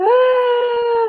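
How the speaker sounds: put-on high, sudden, babyish sobbing cry with a gasp.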